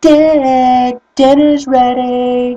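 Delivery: loud, high scream with one word drawn out. Retelling a woman calling Dick out the window, imitating a woman screaming. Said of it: "she's screaming out the window".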